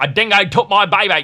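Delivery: belted high and loud in mock Australian accent.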